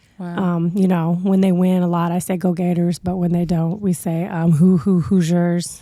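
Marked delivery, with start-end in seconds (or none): 4.5-5.8 flat delivery with no enthusiasm. Saying the team cheer used when they lose, without enthusiasm. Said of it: "You have got to say that with some enthusiasm".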